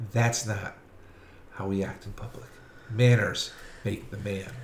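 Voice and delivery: very quiet, low, hushed whisper. Narrating a woman who grabs the listener's nose and speaks into their ear: whispering. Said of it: "she whispers into your ear".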